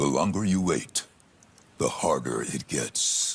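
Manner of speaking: deep trailer narrator voice. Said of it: "built for one thing, and that's movie trailers".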